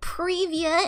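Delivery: привет said with an American accent. Showing off speaking Russian, Привет said with an American accent. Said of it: "I can speak Russian with an American accent".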